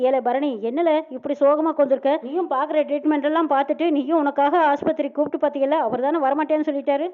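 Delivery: ordinary delivery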